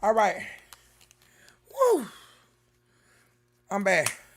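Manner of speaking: breathless and panting, gulping air between words. Back after running up the stairs, the speaker greets the audience out of breath. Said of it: "Y'all gotta catch my breath".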